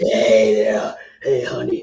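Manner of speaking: put-on very low, drawn-out, chain-smoking old waitress voice. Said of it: "like a ninety-year-old waitress who's smoking a cigarette".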